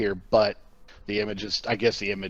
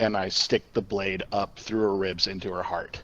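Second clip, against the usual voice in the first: normal talking voice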